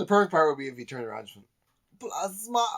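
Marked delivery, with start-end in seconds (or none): 2.0-2.7 put-on European accent, pitched very high. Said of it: "suddenly has a European accent".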